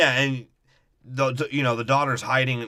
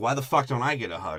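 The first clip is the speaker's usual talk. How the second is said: mock aggrieved, pissed-off, demanding tone; 3 dB quieter than usual. Retelling a film scene, imitating pissed-off Mark Wahlberg. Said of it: "Mark Wahlberg's, like, all pissed off about it".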